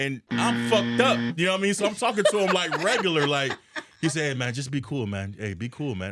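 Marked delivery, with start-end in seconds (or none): 4.3-6.1 put-on Jamaican-inflected accent. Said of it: "your [name] accent".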